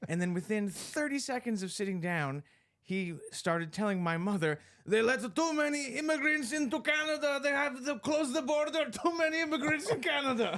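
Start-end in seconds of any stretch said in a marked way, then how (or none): 4.8-10.6 put-on heavy, thick Greek accent, pitched very high. Retelling what a Greek man said to the speaker's mother, in a thick Greek accent. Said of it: "he had a quite a thick Greek accent".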